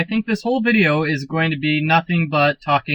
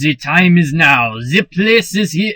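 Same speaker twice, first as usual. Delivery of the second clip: put-on French accent with dramatic, narrating delivery; 4 dB louder than usual. Voicing a character telling a local legend, in a french accent. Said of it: "That's a French accent".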